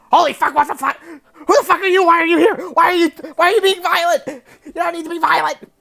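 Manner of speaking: very high, very loud, squeaky, shrill kobold yelling. Narrating as the players kick the door open, in a little kobold mortician voice. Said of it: "the little kobold mortician is like".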